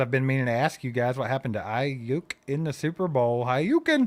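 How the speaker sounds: ordinary delivery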